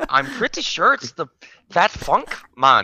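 put-on Irish accent with swooping, sing-song lilt. Asked by a co-host to do it, the speaker puts on an irish accent. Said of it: "Do it in your Irish accent".

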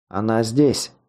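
ordinary delivery

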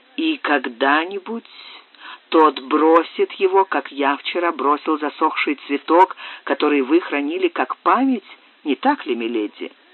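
plain reading voice

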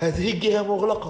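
panicked yell. In a story, people fleeing through back alleys shout, shouting in panic. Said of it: "من ثم صاح القوم في هلع".

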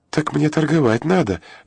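uneasy, worried tone. A girl selling at the market answers a man's suggestion, worried. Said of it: "забеспокоилась девица".

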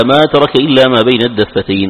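normal talking voice

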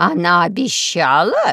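loud, swooping, astonished, surprised tone. A grandmother reacting to a message she has just heard; surprised. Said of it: "удивилась бабушка".

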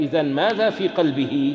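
normal talking voice

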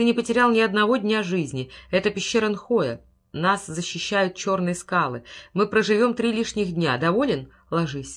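ordinary delivery

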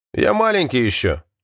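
plain reading voice

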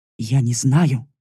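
mumbling haltingly. A narrator voices a worried girl answering a sharp question, stammering mumble. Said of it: "запинаясь, пробормотала".

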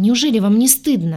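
aggrieved tone. The heroine replying to the demon and the medic, offended. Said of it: "обиженно сказала я".

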